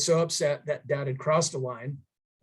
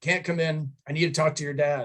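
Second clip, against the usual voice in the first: put-on stern voice. Retelling how a visitor at the door refused to come in: imitating a stern reply. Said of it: "really sternly".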